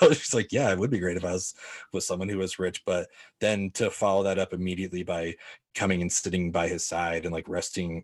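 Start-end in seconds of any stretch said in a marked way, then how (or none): 0.5-2.8 put-on dry, flat, deadpan, sarcastic teasing tone. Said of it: "kinda messing with him right now".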